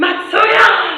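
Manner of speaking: high, loud crowd-style fan shout.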